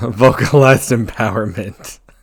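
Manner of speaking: words broken up by laughter throughout. Reading out a renamed skill name: laughing while talking. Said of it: "I can't even say it without laughing".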